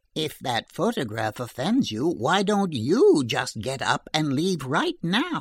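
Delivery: plain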